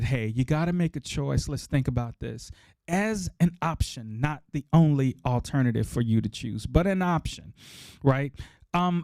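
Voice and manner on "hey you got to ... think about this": ordinary delivery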